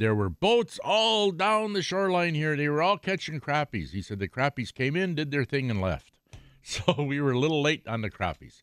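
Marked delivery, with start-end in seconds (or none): 0.0-3.9 high-pitched, easygoing voice.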